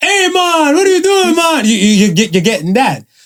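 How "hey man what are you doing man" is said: much higher-pitched fake Jamaican accent. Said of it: "the fake Jamaican accent".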